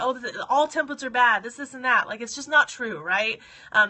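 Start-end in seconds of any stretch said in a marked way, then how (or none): none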